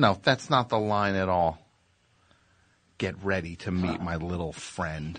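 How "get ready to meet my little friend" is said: soft, mild, gentle delivery. Mocking another speaker's version of a movie line: imitating a gentle reading. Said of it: "So gentle".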